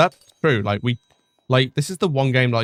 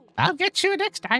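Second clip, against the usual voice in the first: put-on very high, elderly old-person voice; 4 dB quieter than usual. Repeating a game character's line in an old person accent. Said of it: "putting an old person accent was impeccable".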